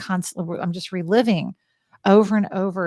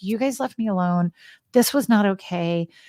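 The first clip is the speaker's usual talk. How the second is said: plain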